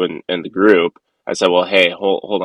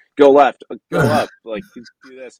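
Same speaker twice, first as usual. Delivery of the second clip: put-on screaming, higher pitch; 7 semitones higher, 3 dB louder than usual. Retelling directions to the other pilot in a simulator: retelling a scream. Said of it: "you're screaming back and forth to the other person".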